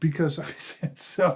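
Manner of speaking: laughing through the words while talking. Reading a listener's letter aloud, laughing while talking. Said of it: "I'm laughing here because this is just too funny".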